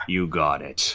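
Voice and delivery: very low, very soft robot voice. Player answering Three Tooth's order as Metal Kelby, in a metallic voice. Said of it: "And in my metallic voice".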